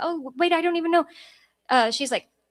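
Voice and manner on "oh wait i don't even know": high, panicky, flustered, caught-off-guard talk. Retelling being threatened with losing the dog: imitating own panicked fast talking. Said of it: "talking like that, like, fast".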